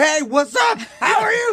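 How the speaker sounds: overexcited, very high, excited all-caps shouting.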